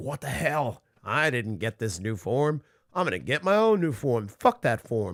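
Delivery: mock angry, fed-up, pissed-off ranting outburst. Retelling a fight scene, imitating someone getting pissed. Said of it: "kinda starting to get pissed".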